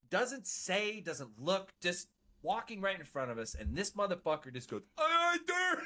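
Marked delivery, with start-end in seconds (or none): 4.9-5.8 very high-pitched shout at full volume. Retelling a recruit in boot camp: imitating someone yelling at full volume. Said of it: "top of his fucking lungs".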